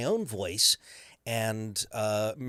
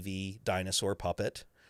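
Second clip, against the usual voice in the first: usual speaking voice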